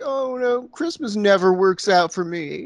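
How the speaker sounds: put-on downcast, sad little boy voice. Retelling a movie scene as the boy in the back: imitating a sad little boy. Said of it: "the sad little boy in the back is just like".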